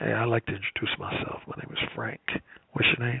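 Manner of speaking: whispered, smooth, self-assured, confident delivery. Retelling a demonstration of approaching a woman: mock confident, smooth, low volume. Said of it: "you have an extremely confident demeanor".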